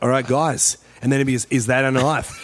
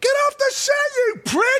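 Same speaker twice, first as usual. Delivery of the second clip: put-on angry yelling, higher pitch. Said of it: "every day he fucking turns and goes".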